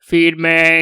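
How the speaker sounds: very deep, low bass-register delivery. Retelling what the speaker said earlier, very deep voice. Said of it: "very deep voice".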